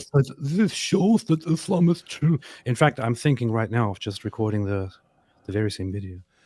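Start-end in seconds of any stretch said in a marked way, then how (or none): 0.0-2.4 put-on dopey, dim-witted voice, high. Showing how he could remake a video as a joke, dumb voice. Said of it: "with a dumb voice".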